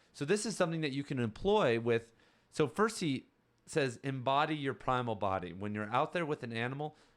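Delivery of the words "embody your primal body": ordinary delivery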